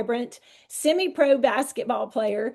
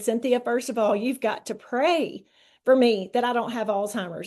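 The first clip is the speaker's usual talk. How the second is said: ordinary delivery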